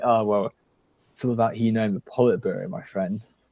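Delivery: half-seductive, suggestive, sultry tone. Retelling what a debate partner said: imitating a seductive tone. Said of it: "he sounded all, like, sort of almost seductive".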